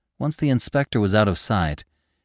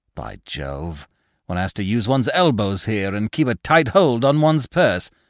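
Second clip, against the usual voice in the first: plain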